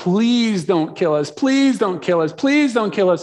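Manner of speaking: mock, desperate pleading, repeated over and over. Retelling how the demons spoke to Jesus: acting out pleading demons. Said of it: "They start pleading".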